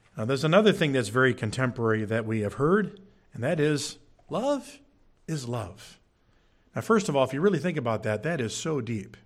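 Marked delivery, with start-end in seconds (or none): 7.3-9.1 dry, sarcastic, faux-impressed awe. Commenting on the saying love is love: sarcastic. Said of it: "I'm being sarcastic".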